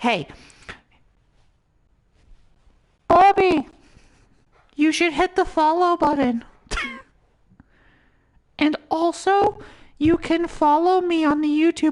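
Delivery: very high, silly cartoon voice. Telling Bobby to hit follow and find him on YouTube, in a Hootie voice. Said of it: "I don't know why I'm doing this voice".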